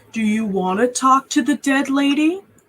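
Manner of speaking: taunting, mocking tone. Voicing a character answering a confused newcomer, in a mocking tone. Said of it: "He kind of says in a mocking tone".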